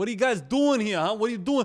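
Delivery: put-on Italian accent, loud and high. Speaker retells a restaurant owner questioning them in the woods, put-on italian accent. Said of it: "the most Italian dude I have ever met".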